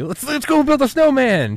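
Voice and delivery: very high, very loud voice swooping wildly. Retelling a movie scene, imitating Bill Murray. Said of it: "Instead of the Bill Murray".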